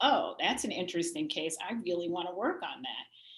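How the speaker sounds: ordinary talk, nothing marked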